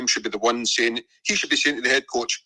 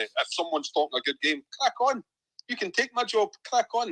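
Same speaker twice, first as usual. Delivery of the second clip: mocking, sarcastic throwaway, pitched up; 9 semitones higher, 4 dB quieter than usual. Dismissing someone who talks a good game: sarcastic. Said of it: "that's me saying it sarcastically".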